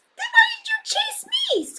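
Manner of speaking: tiny, very high, squeaking mouse voice. Reading a story aloud, the mouse answers the cat in a squeaky mouse voice. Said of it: "Squeaked the mouse".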